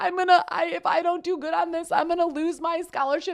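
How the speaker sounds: play-acted crying, very high, tearful, pleading. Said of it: "I called my parents and I was crying".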